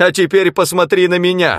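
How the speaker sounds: high-pitched, shouted voice at close range. Narrator reads a man's line, shouted at the narrator. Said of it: "крикнул он".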